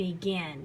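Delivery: stress on "gin" in begin. Teaching stress in two-syllable words, stress the gin in begin. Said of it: "The gin is stressed. You say it a little bit louder".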